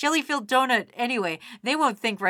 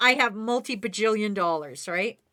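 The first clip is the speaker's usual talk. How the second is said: ordinary talk, nothing marked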